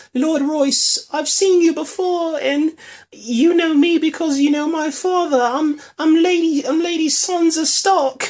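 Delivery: put-on very high, ladylike noble lady accent. Recapping a show scene, speaking Sansa's lines in a Lady Sansa accent. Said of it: "I gotta go into the Lady Sansa accent".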